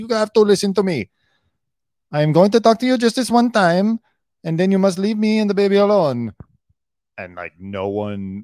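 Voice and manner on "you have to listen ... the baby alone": fake Spanish accent, very high and loud. Recalling a stressed woman who came out in full accent one day, do a fake Spanish accent. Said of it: "you're still doing that fake Spanish accent".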